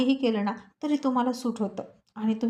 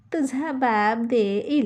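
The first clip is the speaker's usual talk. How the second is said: mocking mimicry, much slower; 4 dB louder than usual. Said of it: "पुन्हा तिची नक्कल करत म्हणाले".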